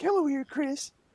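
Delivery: put-on high-pitched elderly man voice. Showing another speaker which Family Guy voice is meant: Family Guy old guy voice. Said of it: "the voice from Family Guy, the old guy".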